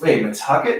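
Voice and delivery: ordinary talk, nothing marked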